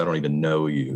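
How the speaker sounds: ordinary delivery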